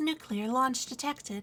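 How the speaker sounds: synthetic, game-style AI announcer voice. Imitating the StarCraft AI lady announcing a nuclear launch: StarCraft AI lady voice. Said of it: "I sound like the A I lady in StarCraft".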